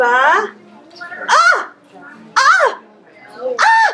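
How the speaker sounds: ba with sounds drawn out. Teacher showing children the sounds in a word, stretched out really slow. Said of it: "by stretching it really slow".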